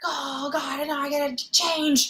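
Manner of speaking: mock yelling, high and drawn-out. Retelling how a restaurant owner reacted to a tip: imitating someone yelling. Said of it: "And Mister Ming just started yelling".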